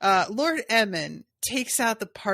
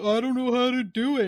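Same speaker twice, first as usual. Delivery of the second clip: insulting, mocking put-on dumb guy voice; 3 semitones higher than usual. Mocking Owen by quoting his words back to him, imitating Owen. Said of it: "dumb guy voice".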